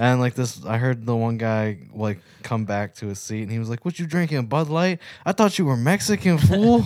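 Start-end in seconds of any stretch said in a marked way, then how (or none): 3.8-6.8 put-on textbook Los Angeles street accent, pitched up.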